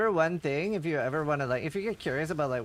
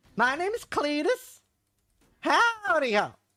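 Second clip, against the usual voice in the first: put-on very high, slow rural American drawl; 12 semitones higher, 3 dB louder than usual. Showing off a favourite American character voice: Cletus rural American accent. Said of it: "I really like my Cletus".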